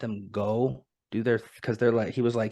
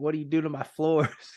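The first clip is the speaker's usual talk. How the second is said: furious, affronted, high, indignant angry outburst; 5 semitones higher than usual. Retelling a film scene where a tied-up man sees his floors torn up: mock-angry. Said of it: "but he's pissed".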